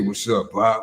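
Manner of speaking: big, deep, low-pitched voice. Retelling how the oldest son greets his dad: imitating son's deep voice. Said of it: "You gotta come at me with the deep voice?".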